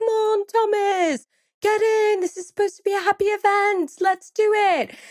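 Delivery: put-on beautiful British accent, very high-pitched. Retelling a cousin urging the father into the picture: imitating Dolores's British accent. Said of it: "She has a beautiful British accent too".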